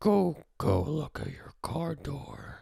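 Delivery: high, scratchy, rough puppet-style cartoon voice. Showing how they would disguise their voice on a call, in a muppet-like voice. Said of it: "now you just sound like a muppet".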